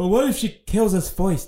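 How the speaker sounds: high storybook lion voice. Acting out a scene where Dorothy is ordered forward; Cowardly Lion impression. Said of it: "That was a pretty good impression".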